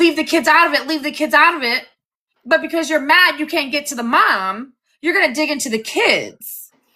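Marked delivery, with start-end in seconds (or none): 0.0-1.9 mock screaming, pitched higher. Retelling what the others keep saying: imitating people screaming. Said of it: "you guys are all screaming".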